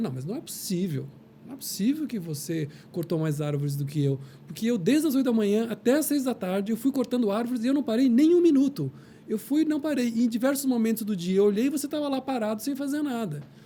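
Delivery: outraged, indignant tone.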